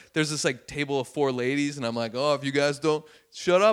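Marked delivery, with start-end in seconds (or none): 2.1-3.7 mock playful teasing tone. Retelling teasing a loud table of four ladies from the stage: retelling playful teasing. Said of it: "trying to do it in a playful way".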